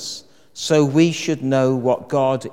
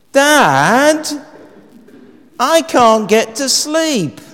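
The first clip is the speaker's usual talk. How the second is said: piercing, shrill, very high-pitched raised call, Dad drawn out; 12 semitones higher, 7 dB louder than usual. Telling an anecdote, voicing someone calling down the stairs to Dad, shrill voice. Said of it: "a shrill voice echoes down the stairs".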